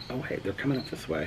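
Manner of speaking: very soft, fast, hushed voice.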